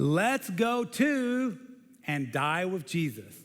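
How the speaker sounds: put-on very slow, dry, sarcastic drawl. Retelling a disciple's words to his fellow disciples, retold sarcastic voice. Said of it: "that sarcastic voice".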